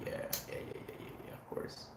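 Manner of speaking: soft, whispered, feigned casualness. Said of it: "We're like".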